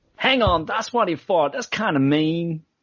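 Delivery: bad put-on American accent, pitched high. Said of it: "let me copy you".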